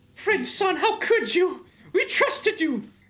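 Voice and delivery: acted, dramatic, betrayed, accusing character voice. Acting out a dramatic betrayal scene in different voices: acted betrayed character voice. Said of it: "So many voices today".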